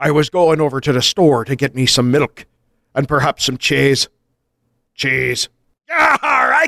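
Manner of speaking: all-out, full-on swashbuckling pirate voice. Trying out a Cornish accent but unable to restrain yourself, go into a full on pirate accent. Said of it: "Full on pirate!".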